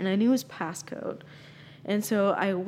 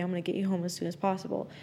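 ordinary delivery

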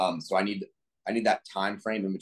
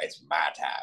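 put-on, fake Louisiana accent; 5 semitones lower than usual. Joking about Brian Kelly after Nick Saban retires, doing Brian Kelly's fake LSU accent. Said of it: "with his fake LSU accent".

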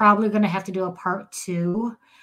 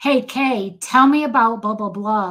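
put-on stressful, pressuring tone, louder; 3 semitones higher, 5 dB louder than usual. Showing how not to question a child: acting out a stressful, pressuring tone. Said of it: "doing it in a stressful way".

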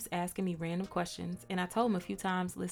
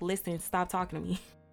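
imitated snappy, snapping tone. Retelling snapping at someone pressing her: imitating a snappy retort. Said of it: "I get a little snappy and I'm like".

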